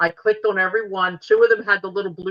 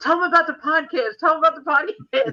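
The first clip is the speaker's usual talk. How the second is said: put-on, insistent, high-pitched yelling, said twice; 8 semitones higher than usual. Recounting yelling over speakerphone while an officer was being met, retelling a yell. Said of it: "and I'm yelling".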